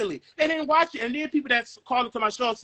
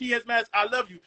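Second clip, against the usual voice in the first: ordinary delivery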